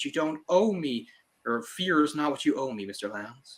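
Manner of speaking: high-pitched, fully committed, dramatic delivery. Comparing two actors' versions of a scene, imitating Ralph Fiennes' dramatic delivery. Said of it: "going for it".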